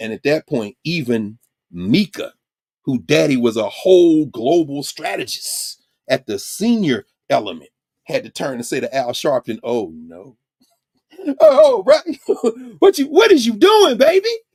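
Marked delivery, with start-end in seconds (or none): 9.6-14.3 very high, loud, swooping pitch. Retelling how Mika turned and spoke to a man: mocking Mika's put-on vernacular.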